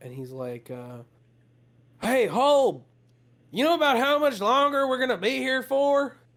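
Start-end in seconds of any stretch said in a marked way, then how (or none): 2.0-6.1 put-on high-pitched calling out. Voicing a guard calling down to the leader holb: screaming down from above. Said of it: "kinda screams down to Holb".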